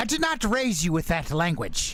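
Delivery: strong put-on British accent. A father scolding his daughter for swearing, thick british accent. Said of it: "with a thick, thick British accent".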